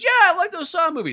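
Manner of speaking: put-on very high, small little boy voice. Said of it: "it sounds like a little boy".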